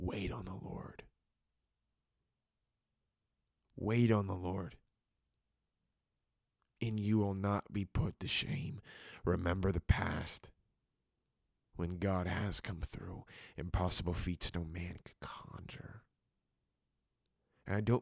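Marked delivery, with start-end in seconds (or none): 0.0-16.0 hushed, soft, unhurried delivery. Speaking to listeners as beloved, quiet and slow. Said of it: "I'm talking quieter and slower than I usually do".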